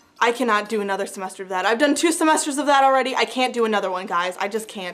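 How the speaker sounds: ordinary talk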